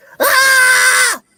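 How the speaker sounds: put-on high girlish scream. Asked to scream like a girl, trying it out on request with a girly scream. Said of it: "Scream like a girl".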